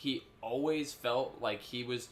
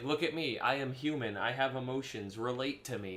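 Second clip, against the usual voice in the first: usual speaking voice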